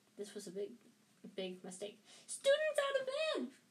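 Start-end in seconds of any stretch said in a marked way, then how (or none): 2.3-3.5 very high, loud, shrill, alarmed bellow. After Ron swipes at him, Peeves calls down the corridor, bellowed. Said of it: "Peeves bellowed".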